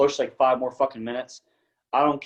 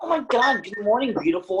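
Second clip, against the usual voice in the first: mock chirpy, very high-pitched, cheerful chipper voice; 10 semitones higher than usual. Retelling how their wife greeted them in the mornings, imitating a chipper voice. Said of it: "when she was so chipper".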